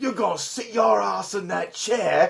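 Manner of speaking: put-on working-class British accent. Imitating a big British actor's movie lines: lower class British accent. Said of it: "a lower class British".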